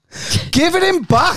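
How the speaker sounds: high-pitched outraged shout.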